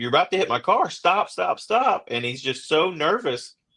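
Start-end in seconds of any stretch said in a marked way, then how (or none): 0.0-2.1 acted shout, higher. Retelling a traffic stop, repeating his own warning to a driver: imitating his own yell. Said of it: "I'm yelling at him like".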